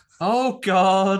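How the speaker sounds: loud, stressed outburst. Quoting the priest's first line at a film funeral: imitating a stressed-out priest. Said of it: "sounds like the priest's having a stressful day".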